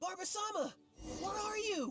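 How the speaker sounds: very high, long, drawn-out calling shout. In a drama, a character calls out for Barbara, yelling. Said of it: "Unless we could start yelling too".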